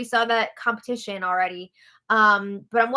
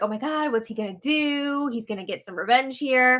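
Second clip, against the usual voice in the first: put-on excited, eager voice buzzing with anticipation; 2 semitones higher than usual. Retelling the viewers' reaction to the plan: imitating excited reaction. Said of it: "we're all excited".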